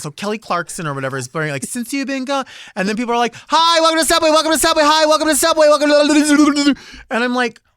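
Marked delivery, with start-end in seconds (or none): 3.4-6.7 loud, pitched-up yelled greeting. Complaining about a sandwich shop, the speaker imitates the staff, imitating yelled greetings. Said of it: "why are you yelling?".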